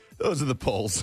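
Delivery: giggling, laughing while speaking. Reading out poll results while the other speaker complains, giggling while talking. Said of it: "What are you giggling about?".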